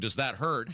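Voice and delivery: plain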